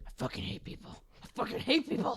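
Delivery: muttered whisper under the breath. Retelling cleaning up knocked-over milk gallons, muttering under her breath. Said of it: "constantly whispering under my breath".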